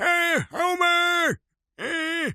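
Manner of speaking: put-on high and creaky like an old-timer. Reading a limerick aloud, breaking off to do the Simpsons grandpa voice. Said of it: "sounds like the grandpa from The Simpsons".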